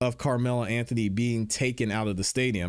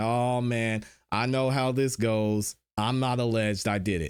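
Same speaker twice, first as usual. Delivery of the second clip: mock sarcastic tone. Repeating a suspect's recorded remark aloud: imitating a sarcastic remark. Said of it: "It sounded sarcastic".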